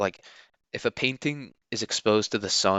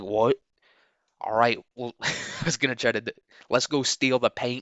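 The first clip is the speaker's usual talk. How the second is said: really bad, terrible put-on Boston accent; 3 semitones higher than usual. Imagining a drunk irish boston man in a bar answering a woman: worst boston accent ever. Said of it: "That was the worst Boston accent ever".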